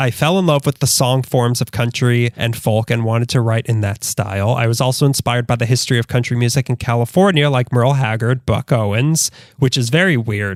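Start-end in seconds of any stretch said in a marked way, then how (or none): none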